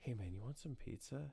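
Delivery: hushed whisper, under the breath. Retelling offering someone pizza at a cottage: retelling a whisper. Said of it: "I'll think I'm fucking whispering".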